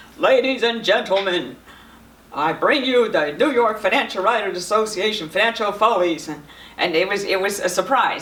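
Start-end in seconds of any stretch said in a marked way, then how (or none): 0.2-6.3 booming, big professional stage-actor voice. Retelling a professional actor, Jay, opening the show, in Jay's booming voice. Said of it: "in this booming voice he said".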